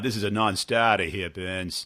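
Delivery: put-on Boston accent. Retelling a phone call, quoting someone from credit: imitating a Boston accent. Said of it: "with the Boston accent".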